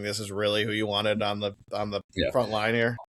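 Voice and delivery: words spoken through acted laughter. Imagining the second-team broadcaster's reaction: imitating Greg Olsen laughing. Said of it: "I'm just laughing, going".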